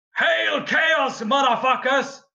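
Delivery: very high yelled battle cry. Voicing a character who yells a battle cry as she fires: yelling a battle cry. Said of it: "as she yells".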